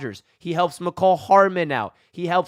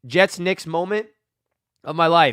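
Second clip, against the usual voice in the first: ordinary talk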